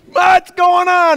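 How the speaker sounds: very high, slow, stretched-out mock scream.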